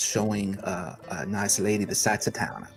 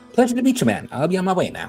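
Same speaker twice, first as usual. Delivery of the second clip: very high, brightest possible swooping sing-song voice; 10 semitones higher, 8 dB louder than usual. Narrator voicing Doc's goodbye right before he leaves; brightest voice possible. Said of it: "says in the brightest voice possible".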